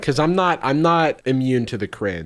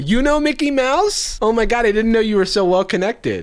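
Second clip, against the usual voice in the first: high, louder, gushing, impressed fan voice. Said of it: "Flooded with people".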